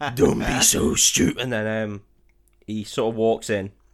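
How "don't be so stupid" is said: gravelly, rough hero-style voice, louder. Retelling a film scene after being asked to do the voice: gravelly Raiden voice. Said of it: "It's a bit Batman-y".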